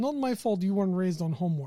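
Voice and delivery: put-on Russian accent. Joking with others about how GIFs talk; Russian accent. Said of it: "talk in Russian accent like this".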